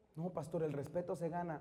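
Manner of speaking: ordinary delivery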